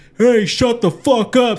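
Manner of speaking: high, loud, furious heckling yell.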